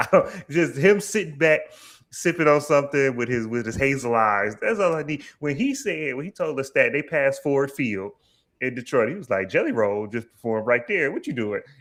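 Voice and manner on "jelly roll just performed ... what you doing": snide, petty, needling sarcastic delivery. Retelling a petty line about a performer nearby: imitating Daniel's petty sarcasm. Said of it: "the pettiness, the sarcasm".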